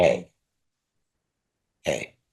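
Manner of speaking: low, dropped voice. A father shows how he gets his kids to straighten up, in a lowered voice. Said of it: "When I lower my voice".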